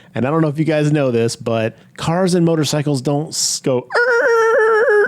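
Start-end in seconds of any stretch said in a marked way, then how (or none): 3.9-5.0 high, loud skidding tire screech sound effect. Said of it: "go "Er" on wet road when you skid".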